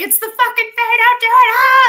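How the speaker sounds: shrill, loud, frightened scream. Retelling watching a video of someone following a voice: imitating own past screaming. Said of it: "And I'm screaming at the".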